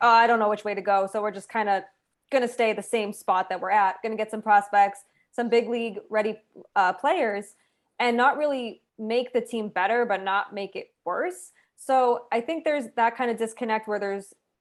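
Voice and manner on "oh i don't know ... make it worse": normal talking voice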